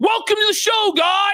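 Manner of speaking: very high, hyped DJ-style delivery. Showing how to welcome viewers over music: high-energy greeting. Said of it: "You have to have some energy".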